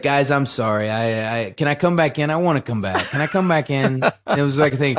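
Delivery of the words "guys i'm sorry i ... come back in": deadpan, flat, expressionless voice with no feeling. Retelling a man asking to be let back in, imitating a deadpan plea. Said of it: "And he's so like deadpan".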